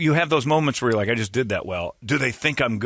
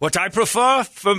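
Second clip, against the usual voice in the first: put-on German accent, higher; 8 semitones higher, 4 dB louder than usual. Joking about a tennis player's comment: Boris Becker German accent. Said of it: "you don't wanna hear in a German accent".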